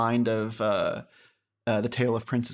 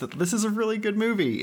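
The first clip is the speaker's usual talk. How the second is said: aggrieved yet overjoyed, much higher, faster; 9 semitones higher than usual. Recommending a film to listeners, in an aggrieved but overjoyed voice. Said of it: "in like a aggrieved but overjoyed voice".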